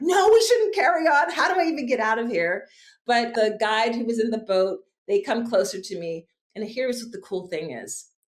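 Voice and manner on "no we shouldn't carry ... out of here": acted out, high, frazzled, all-over-the-place panic. Retelling an answer to a companion while stuck: imitating own panicky reply. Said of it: "all over the place and panicky".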